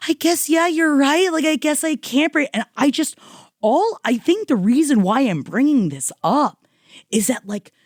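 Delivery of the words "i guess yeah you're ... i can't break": weepy, high, tearful crying voice. Retelling how a woman answered her partner while crying: imitating someone crying. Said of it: "And she's crying, going like".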